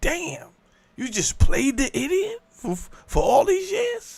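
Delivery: high, slow, stunned disbelief.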